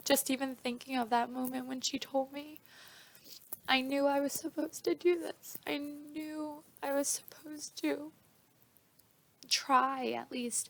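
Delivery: crying while talking, tearful voice. Recalling the moment she was told, crying while talking. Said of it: "I'm crying now".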